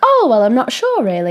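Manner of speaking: vague, rambling, chatty storytelling with sing-song lilt. Describing a caller talking to a dispatcher, imitating a storytelling tone. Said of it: "sounded almost like she was more like telling a story".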